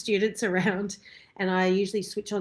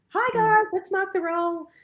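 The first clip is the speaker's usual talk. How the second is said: fake cheerful tone, higher and louder; 12 semitones higher, 4 dB louder than usual. Retelling walking into the studio after crying: imitating own fake cheerful front. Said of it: "put on a fake kind of".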